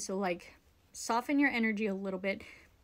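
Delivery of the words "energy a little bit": normal talking voice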